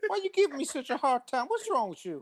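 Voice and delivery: rising pitch. Answering someone who keeps demanding jokes, voice getting higher. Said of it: "your voice is getting higher, too".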